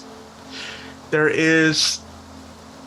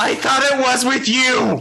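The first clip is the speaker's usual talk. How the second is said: high-pitched, loud yelling. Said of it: "you hear yelling back from inside".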